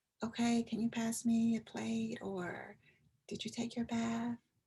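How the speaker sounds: sudden, hushed, very quiet, barely audible whisper. Explaining a strategy of suddenly whispering to them, the speaker demonstrates: whispering. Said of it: "We just whisper like".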